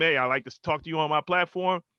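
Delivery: ordinary talk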